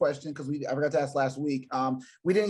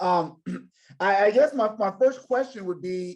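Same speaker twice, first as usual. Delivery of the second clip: overly loud, pitched-up talking; 5 semitones higher, 3 dB louder than usual. Beginning to ask a first question, talking too loud. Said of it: "sorry, I'm talking too loud".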